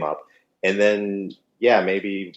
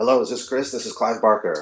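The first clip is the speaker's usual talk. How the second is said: very raspy, heavily rasping voice; 3 semitones higher than usual. Retelling a surprise phone call, imitating Clive Barker's raspy voice. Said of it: "very raspy".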